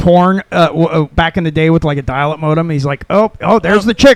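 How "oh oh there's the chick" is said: very animated, lively put-on voice, louder. Retelling a comedian's joke about dial-up downloads: imitating a comedian, very animated. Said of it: "It's the most animated I've ever seen".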